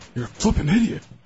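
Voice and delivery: high, goofy comic voice. Doing an impression for a caller to guess: Napoleon Dynamite impression. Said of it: "Napoleon Dynamite".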